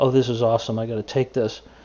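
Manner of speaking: ordinary delivery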